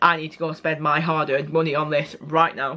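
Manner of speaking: ordinary delivery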